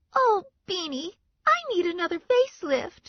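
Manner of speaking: very high, tiny, bright, childlike cartoon voice. Narrator reads Dee Dee's line to Beanie in her Betty Boop voice. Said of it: "Dee Dee said in her Betty Boop voice".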